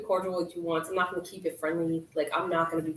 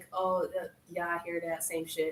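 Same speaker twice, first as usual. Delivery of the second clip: mock dry uninterested tone, quieter; 5 dB quieter than usual. Acting out own texts to an ex: imitating own cold dry reply. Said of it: "It's like the cold, dry type".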